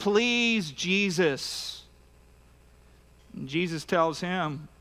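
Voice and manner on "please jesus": imploring, beseeching, pleading begging voice. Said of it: "he's begging".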